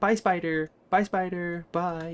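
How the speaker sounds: slow, loud, goofy delivery with drawn-out words. Recalling a scene, the speaker says bye in a funny voice like Alan. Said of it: "saying bye in a funny voice".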